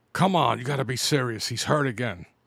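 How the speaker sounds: ordinary talk, nothing marked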